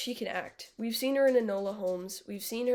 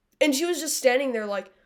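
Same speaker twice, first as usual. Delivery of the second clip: ordinary talk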